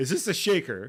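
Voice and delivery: annoyed, put-upon, irritated and pointed tone. Reading a scene where a man points at his empty hand, irritated. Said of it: "He sounds irritated".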